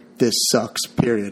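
usual speaking voice

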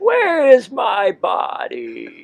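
high, swooping, villainous cartoon villain voice. Joining people competing over who does the better Krang, speak in a Krang voice. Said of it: "That's actually pretty good".

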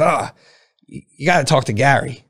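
put-on slow, unhurried, raspy old voice. Retelling advice after sharing a business idea, imitating Jerry's old raspy voice. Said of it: "Jerry's got an old raspy voice".

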